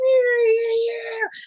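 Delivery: very high-pitched R and B style voice. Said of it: "R and B goes".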